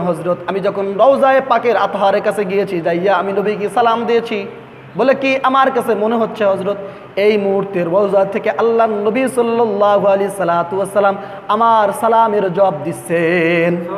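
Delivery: ordinary delivery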